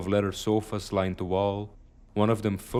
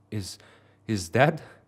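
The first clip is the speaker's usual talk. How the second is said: trembling, stammering, shaky, frightened voice; 3 dB louder than usual. Reading a scary story aloud, a character spots something: shaky frightened voice. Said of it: "Lily's voice was audibly shaky now".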